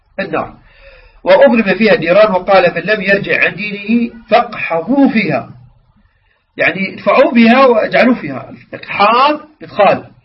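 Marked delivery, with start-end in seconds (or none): none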